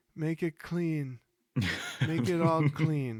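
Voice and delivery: put-on high, dazed, semi-catatonic old-man voice. Talking about a show's actors, doing a semi-catatonic old guy impression. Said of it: "that's a great impression of him too".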